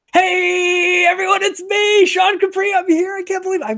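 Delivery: very slow, drawn-out excited scream, long "hey". Introducing himself on air after being asked to: excited screaming. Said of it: "and I'm screaming".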